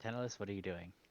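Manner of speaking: parental questioning tone. Asking a player what they are doing on their turn, like a parent questioning a child. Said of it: "The way you say that has the same energy of".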